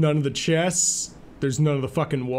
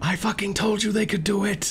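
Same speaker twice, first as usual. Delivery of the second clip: very faint whisper, higher; 5 semitones higher than usual. The game master voices a whisper the players hear in their minds: very faint whisper. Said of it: "very faint whisper in your mind like".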